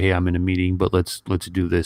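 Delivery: ordinary delivery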